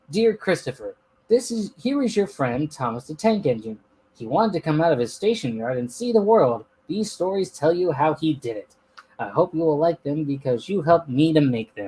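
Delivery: ordinary delivery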